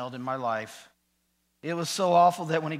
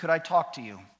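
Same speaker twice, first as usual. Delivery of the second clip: usual speaking voice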